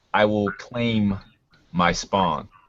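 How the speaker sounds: voice with snakelike, serpentine undertones. A game master voices an unseen presence addressing the players; booming serpentine voice. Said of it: "a booming voice that somehow has the undertones of serpents".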